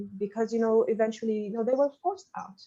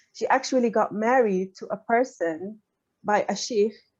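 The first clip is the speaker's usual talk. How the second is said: ordinary delivery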